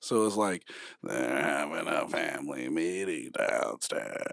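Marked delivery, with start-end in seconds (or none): 1.0-4.2 sinister, very low, rasping gravelly voice. Retelling what a friend said from the parents' room, in a mock-sinister gravelly voice. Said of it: "he said it all sinister and like with the gravelly voice".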